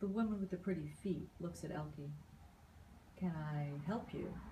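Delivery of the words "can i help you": slow, calm, husky, unruffled voice. Narrating a woman speaking to Elkie, who is looking at her; husky, calm voice. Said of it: "she says in a husky, calm voice".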